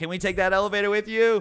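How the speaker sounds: loud calling out across a distance. Retelling how the group called to strangers across a distance: imitating their own yell. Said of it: "We just yelled".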